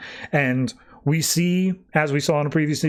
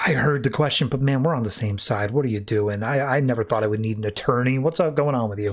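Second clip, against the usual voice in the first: mock glum, dejected, depressed tone; 3 semitones lower than usual. Retelling a comic scene where the Flash answers his arrest: imitating a depressed Flash. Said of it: "Flash is just, like, depressed".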